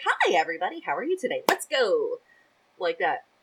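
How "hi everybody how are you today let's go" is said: squeaky, high, swooping helium voice. Contrasting self with a steady partner, in a high helium-like voice. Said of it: "I'm like helium going".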